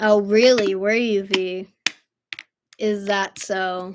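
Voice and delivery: sarcastic tone. Responding to V after admitting a mix-up: sarcastic. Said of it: "I'm being sarcastic".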